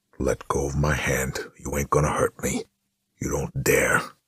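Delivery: sneering, low-voiced. A narrator reads the big enforcer's reply, low sneering voice. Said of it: "Pound sneered, in a voice so low".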